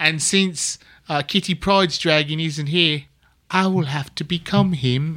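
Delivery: put-on wonky English accent. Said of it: "my English accent went so wonky".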